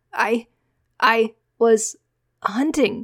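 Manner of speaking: high, loud stammer, stumbling over words. A boy caught by soldiers after curfew answers Micah, stuttering. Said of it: "he stuttered".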